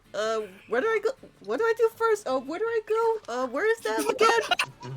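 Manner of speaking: put-on lost and confused voice, pitched way up. Retelling the confused look while directions are explained: acting confused. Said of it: "the confused look".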